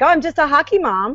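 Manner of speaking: Northern Michigan way of talking. Showing how people in Northern Michigan sound and how you used to, do a Northern Michigan accent. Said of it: "Northern Michigan they sound like that".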